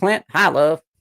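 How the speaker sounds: put-on true backwoods hillbilly accent. Reading a viewer's greeting aloud, true hillbilly voice. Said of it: "I sounded like a true hillbilly".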